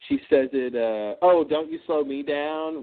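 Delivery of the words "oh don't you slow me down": imitated snide tone. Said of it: "that little snide comment".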